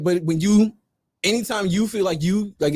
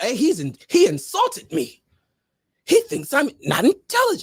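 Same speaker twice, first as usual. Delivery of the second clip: anime-style voice, much higher; 7 semitones higher than usual. Speaker mocks an offended reaction to a friend's teasing, anime character voice. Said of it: "sound like an anime character when you said that".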